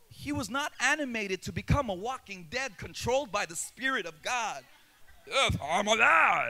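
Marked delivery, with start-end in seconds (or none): 5.3-6.5 Arabian accent with alive stretched long. Acting out a dead man brought back to life, in an imagined Arabian accent. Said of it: "That's how I imagine the accent of an Arabian dead man".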